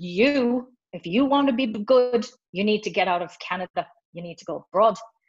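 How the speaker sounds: badly faked, unconvincing, terrible Irish accent. Retelling what a man said when he pulled him aside, in a terrible Irish accent. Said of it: "that's a terrible accent".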